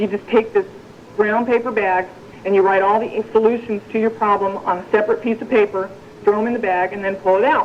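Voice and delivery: ordinary delivery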